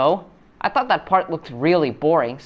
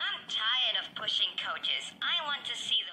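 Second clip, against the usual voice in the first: put-on shrill character voice; 6 semitones higher, 13 dB quieter than usual. Trying out voices for a character tired of pushing coaches: Thomas in shrill woman voice. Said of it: "I'm gonna give him a shrill woman voice".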